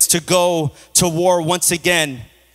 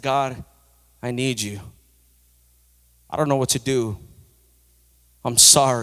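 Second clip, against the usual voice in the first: tearful, pleading cry, near tears; 5 semitones lower, 4 dB quieter than usual. Retelling crying out to god during a night shift: retelling a tearful plea. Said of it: "I'm crying out to the Lord".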